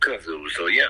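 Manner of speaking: ordinary talk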